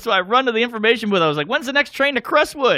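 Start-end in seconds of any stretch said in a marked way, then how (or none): 1.5-2.8 put-on old-timey 1950s man voice, pitched up. Retelling asking the information booth about the next train, sounding like a 1950s guy. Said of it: "I sound like a guy from the fifties".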